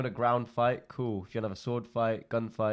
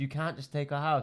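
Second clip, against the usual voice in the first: mock screaming woman's voice; 4 semitones higher than usual. Retelling a neighbor taking over a house, imitating a woman screaming. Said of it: "she's a woman screaming like".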